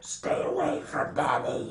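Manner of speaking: dark, ghostly shadow-creature voice.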